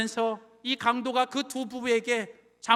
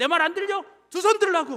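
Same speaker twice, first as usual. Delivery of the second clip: mock furious, high-pitched, angry put-on voice; 6 semitones higher, 4 dB louder than usual. Retelling a robbery story, voicing the robber, imitating an angry robber. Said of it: "강도가 화가 나가지고".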